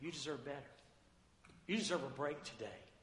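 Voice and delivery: soft, low, hushed, close half-whisper. Describing temptation in a sermon: Satan's voice half-whispering. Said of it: "He's whispering in your ear".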